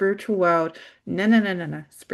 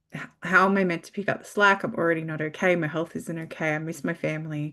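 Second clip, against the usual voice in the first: ordinary delivery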